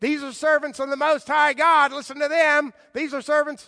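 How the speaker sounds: piercing, shrill, very high-pitched, very loud cry. Retelling the slave girl following Paul and Silas, acting out a shrill shout. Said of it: "shout out in a shrill voice".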